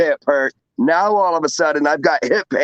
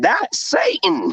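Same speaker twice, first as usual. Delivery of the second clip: put-on little kid voice; 3 semitones higher than usual. Retelling what a spirit voice said on a recording: imitating a child's voice. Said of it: "The child voice came through and said".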